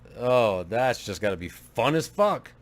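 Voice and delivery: slow, dry, mocking sarcastic tone. Reacting to a game town that has a KKK: sarcastic. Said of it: "I'm saying that sarcastically".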